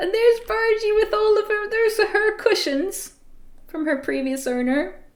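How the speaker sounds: high bunny character voice.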